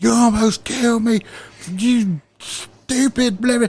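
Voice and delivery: shrill, very high-pitched, furious yelling. Speaker re-enacts yelling at someone during an argument; retelling an angry scream. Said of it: "and I'm screaming".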